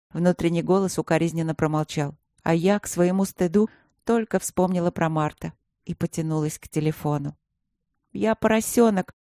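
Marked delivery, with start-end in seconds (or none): 8.1-9.0 hurried and rushed, pitched much higher. The narrator, phoning Martin after forgetting their meeting, confesses hurriedly. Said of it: "торопливо призналась я".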